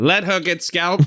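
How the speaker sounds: put-on old-world, courtly medieval knight voice. Friends discussing a movie, one repeats a line in a Camelot voice. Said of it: "Threw on your Camelot voice there".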